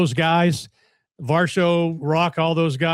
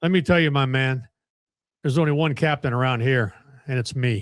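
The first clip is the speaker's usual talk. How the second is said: put-on dry, expressionless, low deadpan voice; 4 semitones lower than usual. Retelling how Jim answered who the captain was: imitating Jim's deadpan.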